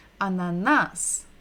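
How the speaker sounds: ananas stressed on final syllable -nas. Listen-and-repeat russian vocabulary drill, stress on last syllable nas. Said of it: "we're stressing the final syllable, the last syllable".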